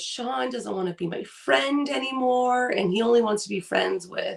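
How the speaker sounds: mock tearful, sobbing, broken-down child's voice. Retelling how a child broke down over losing a friend: imitating a child breaking down crying. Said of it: "he breaks down and goes".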